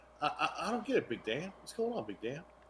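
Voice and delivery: very soft, hushed, slightly odd southern twang. Retelling what a man kept saying, in a weird little southern twang. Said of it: "with that weird little southern twang".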